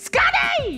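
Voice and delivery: put-on screaming voice. Retelling how mom screamed at Bulls games: imitating mom screaming. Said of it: "just screaming".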